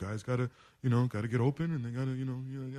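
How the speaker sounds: passive-aggressive athlete voice, full of fillers. Imitating a quarterback's interview comments about receivers: Aaron Rodgers impression. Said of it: "my best Aaron Rodgers in-".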